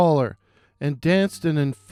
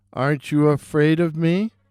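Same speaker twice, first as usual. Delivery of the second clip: harsh, croaking, croaky voice. Narrator reading a tale, a figure in a graveyard addressing a soldier: harsh croaking voice. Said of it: "the figure said in a harsh, croaking voice".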